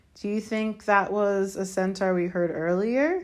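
ordinary talk

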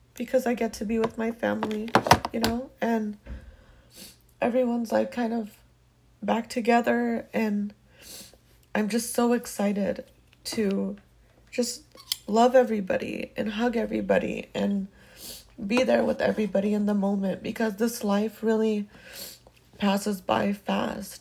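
weeping, tearful and grateful. Talking about getting to be with family again, crying with gratitude. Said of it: "I'm crying because I have so much gratitude today".

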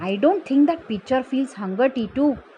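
ordinary delivery

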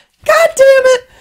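very high, very loud, shrill, drawn-out squeaky cry. Imagining a deadlifter whose weight slips and drops: really high-pitched voice. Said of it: "What if he's got a really high-pitched voice".

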